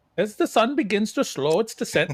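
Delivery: put-on Swedish accent sounding Dutch. Trying a swedish accent on the show's closing line, a swedish accent that sounds dutch. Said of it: "that's Dutch".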